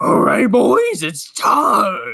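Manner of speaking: loud, high, swooping put-on cartoon dog voice. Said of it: "I almost narrated in the Scooby voice".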